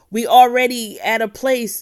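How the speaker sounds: high, loud, excited, worked-up rant.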